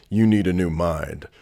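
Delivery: low, deep, pronouncing voice. Quoting a voice recording heard on a workout playlist: imitating T D Jakes's deep voice. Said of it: "in this deep voice".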